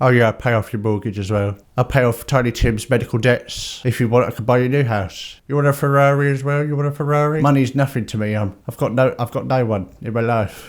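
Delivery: breezy, casual, offhand throwaway tone. Retelling how Scrooge offers gifts to Bob Cratchit: casually imitating Scrooge. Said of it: "you can just casually go".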